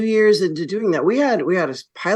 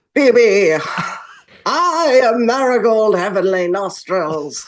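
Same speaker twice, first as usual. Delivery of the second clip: very slow, drawn-out mid-Atlantic accent with a quaver; 3 semitones higher, 4 dB louder than usual. Showing how the character Marigold sounds in readings: mid-Atlantic Katharine Hepburn-like voice. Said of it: "mid-Atlantic, like, Katharine Hepburn-y thing".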